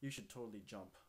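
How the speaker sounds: low, dead serious, sarcastic delivery. Showing an example of sarcasm while explaining what sarcasm is: sarcastic. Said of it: "That's sarcasm".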